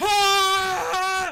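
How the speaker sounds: high, loud screaming like a whole crowd. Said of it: "the crowd starts cheering, starts screaming, it's like".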